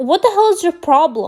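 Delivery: mock exasperated, heated, pissed-off angry tone. Retelling an argument with mom about a phone: imitating own yelling. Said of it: "I'm already yelling at her".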